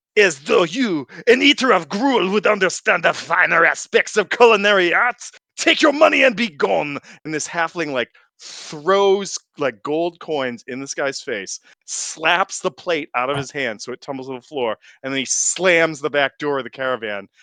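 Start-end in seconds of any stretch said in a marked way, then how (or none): 0.1-6.9 mock, high-pitched, raging, furious screaming rant. Voicing a red-faced halfling cook screaming at a customer: furious screaming halfling cook. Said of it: "screaming at this guy".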